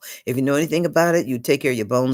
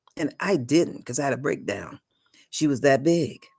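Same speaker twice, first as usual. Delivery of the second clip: ordinary talk, nothing marked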